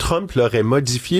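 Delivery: normal talking voice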